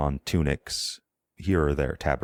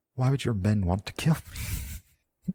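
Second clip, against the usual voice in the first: high, hushed whisper; 6 semitones higher than usual. A worried man, just told men are here to kill him, whispering back. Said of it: "he kind of whispers back".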